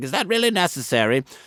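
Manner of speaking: put-on prim, old-fashioned, high-pitched, sniffy disapproving tone.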